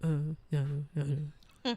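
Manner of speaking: mock closed-mouth mumbling. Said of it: "I can't talk".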